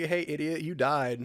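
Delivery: ordinary delivery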